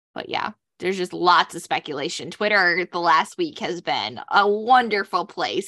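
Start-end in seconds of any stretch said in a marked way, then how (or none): 2.4-5.7 thick, heavy, dripping sarcasm. Talking about speculation on Twitter over the last week: very sarcastic. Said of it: "I say that very sarcastically".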